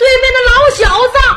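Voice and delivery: high-pitched, loud, wailing cry with shouting.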